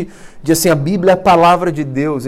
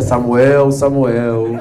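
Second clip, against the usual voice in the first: solemn, grave, deep voice; 6 semitones lower than usual. Voicing God calling Samuel in a Bible reading, deep grave voice. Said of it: "Por que Deus tem essa voz grave ... A gente lê o texto de Samuel assim".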